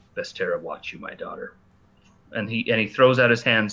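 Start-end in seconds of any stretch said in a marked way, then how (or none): 0.2-1.5 barely audible whispered mutter under the breath. Narrating a tabletop game, a character speaks toward you, muttered under his breath. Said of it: "under under his breath say".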